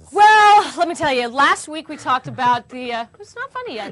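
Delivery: loud yelling voice. Asked what's big in the news, the host answers, yelling. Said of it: "You're yelling".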